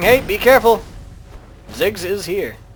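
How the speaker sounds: ordinary talk, nothing marked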